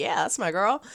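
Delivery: ordinary talk, nothing marked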